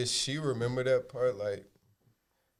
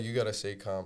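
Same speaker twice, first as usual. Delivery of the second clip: ordinary delivery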